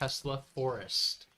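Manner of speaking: said very slowly, words carefully spaced. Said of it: "One more time".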